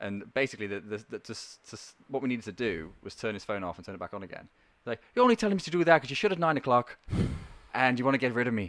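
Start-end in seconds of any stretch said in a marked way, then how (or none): 5.2-8.7 put-on voice with a raised Irish accent. Retelling a call from an angry caller from Ireland: Irish accent impression. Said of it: "That's great Irish voice".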